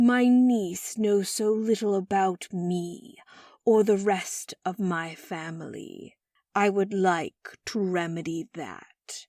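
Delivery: cold, ice-cool, measured, very slow delivery. A great-uncle speaks after the family asks about him: cool as ice. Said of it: "The corners of Great Uncle [name]'s mouth turned upward in what was supposed to be a smile, / Uncle [name] shook his head. / [name]'s voice was as cool as ice on a winter's pond".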